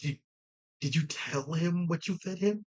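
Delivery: very quiet, barely audible half-whisper. Voicing a character who leans over to a companion: half-whispering. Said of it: "trying to whisper to Nikito again".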